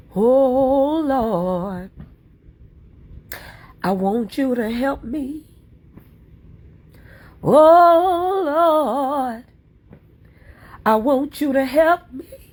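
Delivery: put-on high, loud, tearful pleading old woman voice.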